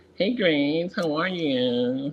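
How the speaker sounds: high, very slow camp voice with stretched "you".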